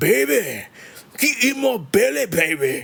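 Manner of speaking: put-on Scottish voice. Sharing a favorite voice to do, then apologizing to Scottish people: Fat Bastard voice. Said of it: "I love doing the uh, fat bastard voice".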